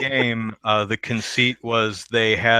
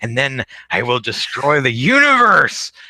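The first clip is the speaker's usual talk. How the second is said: loud, swooping, hammed-up cartoon villain voice; 3 semitones higher, 6 dB louder than usual. Recalling an Earthworm Jim cartoon episode, the villain cat speaks: Evil the Cat impression. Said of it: "I have no idea if this is an accurate impression".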